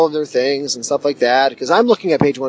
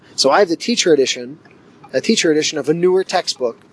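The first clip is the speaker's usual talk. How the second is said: ordinary talk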